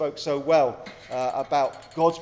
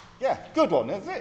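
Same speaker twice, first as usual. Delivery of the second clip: plain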